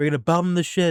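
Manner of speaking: high, loud, screaming rant. Contrasting politicians' temperaments: imitating Trump screaming. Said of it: "Trump getting on a podium and screaming".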